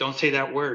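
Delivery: mock-upset, tearful crying voice. Retelling what she said while crying as he talked to her, imitating someone crying. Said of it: "She starts crying and she's shaking her head".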